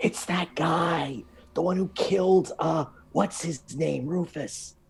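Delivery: loud theatrical stage whisper. Voicing a character who ducks into a room on seeing someone: stage whisper. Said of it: "she's literally stage whispering".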